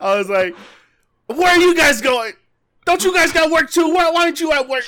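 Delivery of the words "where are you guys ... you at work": shrill, very loud, high-pitched all-out yell. Retelling a lunch break spent at cars passing by: imitating himself yelling. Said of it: "yelling at cars passing by".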